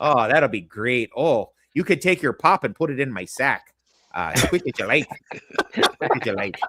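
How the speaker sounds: put-on Midwestern accent. Imitating how midwestern people will talk to the guests: put-on midwestern accent. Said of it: "They'll be like".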